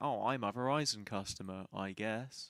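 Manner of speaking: low, slow, unenthusiastic drawl. Mocking an ad where David Beckham doesn't sound too enthusiastic: imitating unenthusiastic David Beckham. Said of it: "David Beckham doesn't sound too enthusiastic".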